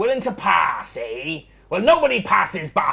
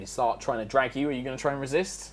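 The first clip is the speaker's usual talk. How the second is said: plain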